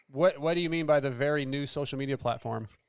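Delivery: normal talking voice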